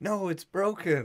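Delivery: insistent, high, pained cry of hurt. Retelling a friend's injury, imitating someone screaming in pain. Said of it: "he's screaming in pain".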